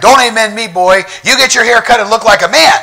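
preacher's yell. Retelling how a well-known pastor yelled at a long-haired man: imitating a pastor yelling. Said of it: "starts yelling at him and says to him".

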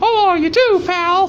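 squeaked out, way up high. Answering someone who says to take care, say goodbye as a Mickey Mouse impression. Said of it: "That's my Mickey Mouse impression".

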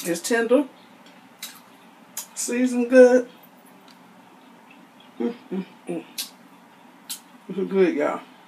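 talking with mouth full of food. Tasting food on camera, speaker comments to viewers, talking with food in mouth. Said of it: "I'm supposed to talk with food in my mouth".

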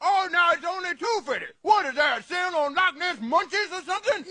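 mocking shout, high-pitched and scornful.

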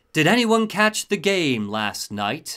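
sleek, smooth robotic announcer voice over a loudspeaker. Narrator voicing an announcement over the tannoy, smooth robotic voice. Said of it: "A smooth robotic voice says".

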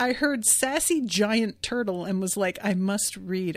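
ordinary talk, nothing marked

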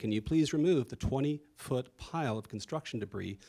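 ordinary talk, nothing marked

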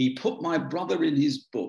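put-on thick, broad Suffolk accent laid on heavily. Retelling what a man called out as the speaker was leaving, in a broad Suffolk accent. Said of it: "he said in his broad Suffolk accent".

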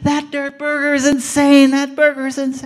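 very high, very loud, shrill, booming scream. Retelling what a man screamed as he ran out the door, retelling a scream. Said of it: "he's screaming away".

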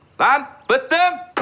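loud high-pitched yell.

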